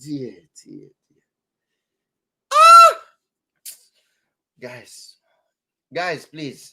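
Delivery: overcome with emotion. Talking to viewers about people the church disowned, getting too emotional. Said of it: "I'm getting too emotional now".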